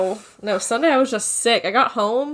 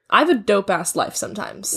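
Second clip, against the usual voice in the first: ordinary delivery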